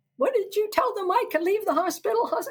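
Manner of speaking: mock very high, shrill, frantic screaming. Retelling Dad's phone call after the long drive home, retelling a scream. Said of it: "He was screaming".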